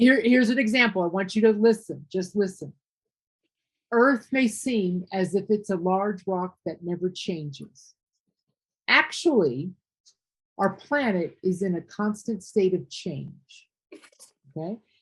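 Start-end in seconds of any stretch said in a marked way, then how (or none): 3.9-13.7 measured reading, full stop at periods, pause at commas. Example read aloud to show phrasing: clear pauses at periods and comma. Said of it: "I stopped when I came to the period. I took a pause when I saw a comma".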